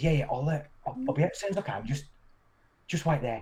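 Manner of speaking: put-on stage whisper. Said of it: "in a stage whisper".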